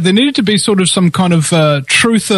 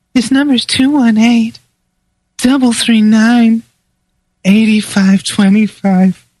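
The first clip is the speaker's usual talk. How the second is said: put-on sexy female voice, pitched higher; 3 semitones higher than usual. A show host tries a bit: sexy female voice. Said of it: "maybe I could do it in a sexy female voice".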